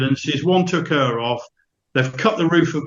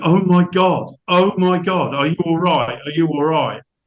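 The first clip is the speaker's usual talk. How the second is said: put-on crying in a woman's voice. Retelling what a woman said after the crash: imitating a woman crying. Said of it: "all I could hear was this woman crying, going".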